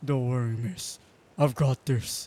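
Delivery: rugged, manly, gruff, deep, loud voice. Narrator voices the stranger who caught her from falling, in a gruff, deep, manly voice. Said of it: "A gruff, manly voice. The deep, reassuring voice".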